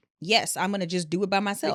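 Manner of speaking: plain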